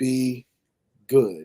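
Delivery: very slow, deliberate, drawn out word by word. Signing off to the audience with a final wish, very slow. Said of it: "I'm going to say this very slowly".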